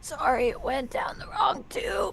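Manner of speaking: hoarse rasp. Voicing a woman's line in a story, raspy voice. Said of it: "in a raspy voice".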